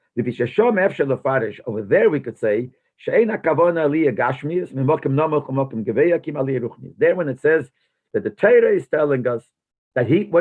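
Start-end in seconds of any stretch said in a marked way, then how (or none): none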